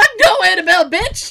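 panicked yell, high and loud.

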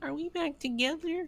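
put-on very high-pitched babyish voice. Recapping a bedroom scene, voicing Kelly, Kelly baby voice. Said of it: "Remember that old Kelly baby voice?".

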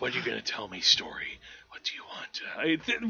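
serious, grave, hushed whisper, barely voiced. Mocking how characters in the movie talk, in a hushed, serious whisper. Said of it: "Voices like that".

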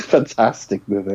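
ironic, sarcastic, fake enthusiastic praising tone. Calling a movie just described as bad fantastic: sarcastic fake praise. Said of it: "So sarcasm".

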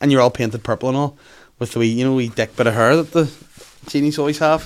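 usual speaking voice

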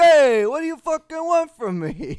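very high, loud, stretched-out, drawn-out yelling. Imagining an Italian fight where she's yelling at you: imitating someone yelling. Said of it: "yelling at you, like".

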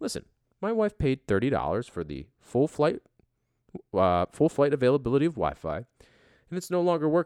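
calm, composed, even, measured delivery. Retelling a complaint to a flight attendant about broken Wi-Fi: imitating own calm explanation. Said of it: "very calmly explained to him".

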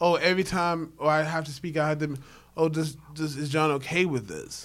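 normal talking voice

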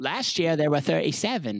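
bad fake English accent. Interjecting during a talk about a Harry Potter parent: terrible English accent. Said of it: "That's my terrible English accent".

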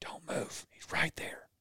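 hushed whisper, very quiet and barely voiced. Retelling a hunt, the speaker repeats what they said on seeing antlers, retelling a whisper. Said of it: "kind of whisper".

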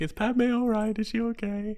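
very high, whiny voice. Mocking a movie scene, quoting the masked villain: whiny Darth Vader voice. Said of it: "trying to act like whiny Anarchy".

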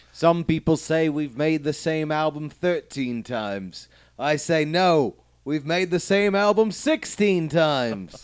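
put-on Liverpool accent, high-pitched and slow.

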